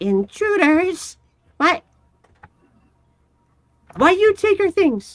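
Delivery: very high, squeaky, shrill creature cry. Narrating a game scene, the storyteller voices an unseen speaker above, very high-pitched. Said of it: "it's a very high pitched voice".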